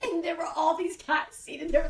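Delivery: high laughing, giggles bubbling over.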